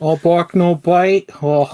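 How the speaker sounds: put-on tough greaser voice. Taunting an imagined weak player in a put-on greaser voice. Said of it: "trying to go for a greaser vibe".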